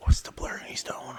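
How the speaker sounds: hushed whisper.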